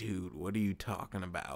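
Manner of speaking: nice and relaxed, condescending talking-down tone. Describing how a fighter talks trash: imitating Dominic Cruz, chill and condescending. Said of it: "he talks down to you in a very chill way".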